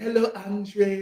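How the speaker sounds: put-on girl's French Haitian accent. Retelling how a Haitian girl from campus greeted a guy; French Haitian accent. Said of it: "she had the French Haitian accent too".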